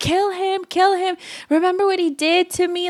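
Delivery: frantic, high, half-screamed urgent voice. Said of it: "Saga was screaming".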